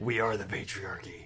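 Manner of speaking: very quiet, slow, hushed, murmured masked-hero voice. Joking along that they are the patriarchy: Batman voice. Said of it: "I was being Batman".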